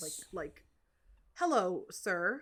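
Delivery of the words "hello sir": put-on robotic, rehearsed-sounding voice. Speaker retells how a kid asked for a ride: imitating a mechanical voice. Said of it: "the second kid's voice sounded almost like mechanic".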